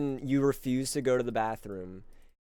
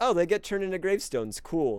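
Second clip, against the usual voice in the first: mock unbothered, chill, offhand tone, pitched up; 5 semitones higher than usual. Retelling a sister's reaction to a burning house in The Sims: imitating sister's chill tone. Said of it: "my sister's chill about it".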